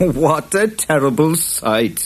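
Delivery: slow delivery, said through a laugh. A character answers a Boggart threatening a fight, laughing. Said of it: "laughed Jude".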